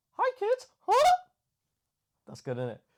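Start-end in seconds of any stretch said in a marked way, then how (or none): 0.2-1.1 very high, loud, cartoon-style voice. Claiming to do a good one, then showing it: Mickey Mouse voice. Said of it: "I can do a good Mickey Mouse".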